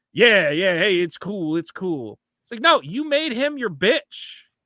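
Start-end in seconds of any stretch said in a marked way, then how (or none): 0.2-2.2 casual, cool, unbothered, shrugging tone. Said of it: "the way he acts is like".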